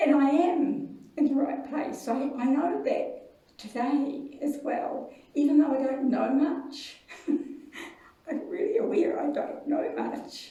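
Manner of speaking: weeping through the words. Telling listeners you are crying now, speaking while crying. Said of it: "I'm crying now".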